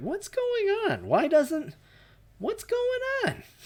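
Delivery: very high, swooping, baffled and bewildered cry. Recalling reacting when the dialogue options suddenly ran out: high-pitched voice. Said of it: "my voice went high like that".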